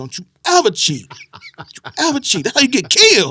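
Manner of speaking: loud, rising, livid scolding tone in mock grandfather voice. Retelling a grandfather catching kids cheating at cards: imitating a livid grandfather. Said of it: "my grandfather caught us and was livid".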